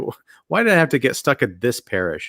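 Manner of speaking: hushed, let-down mutter under the breath. Retelling a film priest's reaction to guns at a funeral: muttering, disappointed. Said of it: "almost like under his breath, kinda disappointed".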